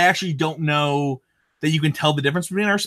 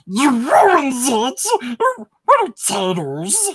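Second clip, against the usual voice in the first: very slow, high, swooping, drawn-out sing-song put-on voice; 6 semitones higher than usual. Quoting a favorite Smeagol line spoken to Samwise, Smeagol voice. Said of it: "all my favorite lines from Smeagol".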